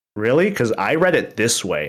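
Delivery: ordinary talk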